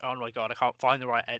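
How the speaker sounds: ordinary talk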